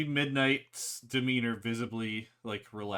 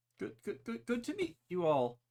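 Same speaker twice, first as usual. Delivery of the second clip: very high, timid, shy squeak, sing-song; 10 semitones higher than usual. Midnight, hiding in her hair, greets the group in a shy Midnight voice. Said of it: "Seems a bit shy".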